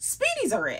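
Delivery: thrilled, high, excited gushing voice. Starting to talk about a favourite bag: high-pitched excited voice. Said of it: "did you hear how high my voice got?".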